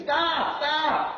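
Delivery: high-pitched, loud screaming.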